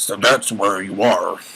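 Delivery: low, rough, gravel-edged voice. A narrator voicing a Pegasus pony who finds a girl; gravelly voice. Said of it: "came a gravelly voice".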